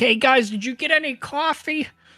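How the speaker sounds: calling out loudly. The speaker calls to two out-of-town strangers: yelling across a bar. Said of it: "I'll just yell across the bar".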